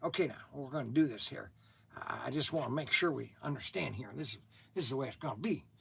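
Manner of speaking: low, very quiet, hushed, rushed delivery. Recounting his presidential impressions, a speaker does a George W. Bush impression. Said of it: "the younger George Bush was kind of like".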